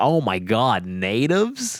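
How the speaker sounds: put-on very slow, drawn-out, swooping American accent. Retelling what an American lady on a tour said, American accent. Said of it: "the American lady, she was like".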